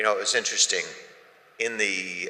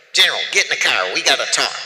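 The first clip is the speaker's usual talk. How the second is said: put-on Southern accent, very loud, pitched up; 6 semitones higher, 9 dB louder than usual. Retelling what the president said on arrival: imitating a southern accent. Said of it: "Southern accent".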